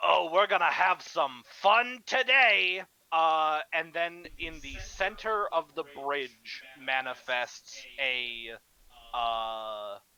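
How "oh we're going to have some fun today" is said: loud, cackling voice. Game master voices a presence calling out through the intercoms, in a cackling voice. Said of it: "a cackling voice".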